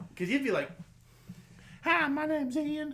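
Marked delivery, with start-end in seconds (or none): 1.8-2.9 horribly bad Southern accent, very high-pitched and slow. Recalling how the listener used to talk as a kid, in a horrific southern accent. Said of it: "you had this horrific Southern accent".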